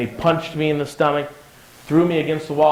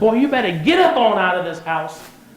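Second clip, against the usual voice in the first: Southern mom voice, pitched up, rousing tone; 6 semitones higher, 3 dB louder than usual. Retelling his mother answering his pleas to go to school later: Southern mom impression. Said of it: "she's kind of Southern".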